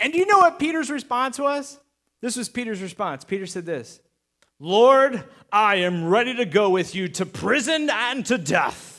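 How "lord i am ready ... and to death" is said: fake coughing voice, much slower. Telling a Bible story, acting out Peter's reply while put-on coughing. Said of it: "That's how I imagine Peter talking when he's coughing".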